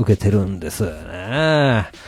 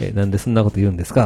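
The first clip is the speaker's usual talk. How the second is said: ordinary talk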